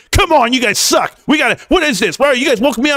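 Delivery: put-on angry, irritated, high-pitched rant. Retelling what a gaming buddy says while playing: imitating an angry friend. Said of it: "Always angry".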